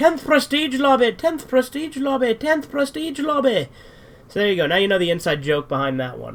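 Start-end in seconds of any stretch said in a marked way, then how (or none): 0.0-3.7 play-acted shrill, very high, repeated screaming. Retelling how an ignored person kept calling out, imitating someone screaming. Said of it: "he just started screaming".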